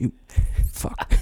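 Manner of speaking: mock leering onlooker voice. Asked to do the impression of the Pulp Fiction guy watching Marcellus: imitating the guy in Pulp Fiction. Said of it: "do the impression of it".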